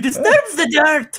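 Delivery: put-on very high, shrill, loud, zany French-accented voice. [name] repeats his character's line, in a whacked-out Frenchman voice. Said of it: "play the whacked out kind of Frenchman".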